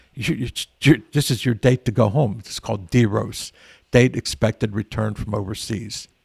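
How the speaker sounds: ordinary talk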